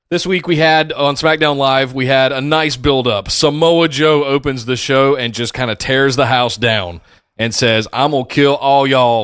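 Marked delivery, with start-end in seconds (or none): 7.9-9.2 put-on genteel Southern gentleman accent. Retelling a wrestler's threat from the show, in a put-on Southern gentleman accent. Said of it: "Not like a Southern gentleman like you just did".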